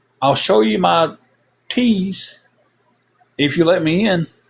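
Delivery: put-on girl's hollering voice, called out as through door. Recounting a night at a hotel, imitating a girl hollering out. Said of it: "this girl hollers out".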